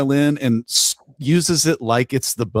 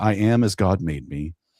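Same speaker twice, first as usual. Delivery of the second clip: low, calm, non-confrontational deadpan; 6 semitones lower, 4 dB quieter than usual. Recounting a clerk insulted by a manager, the speaker quotes his line, retelling a deadpan reply. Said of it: "he just very deadpan says".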